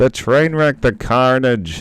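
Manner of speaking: bad high-pitched shout. Describing the carnage after a kill: horrible Jim Ross impression. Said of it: "that was a horrible impression".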